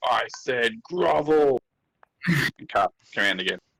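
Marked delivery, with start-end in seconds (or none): 0.0-1.6 high-pitched dragon-like cry. Flip yells back at the Mesloth, dragon-like scream. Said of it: "the most dragon-like voice he can muster and scream".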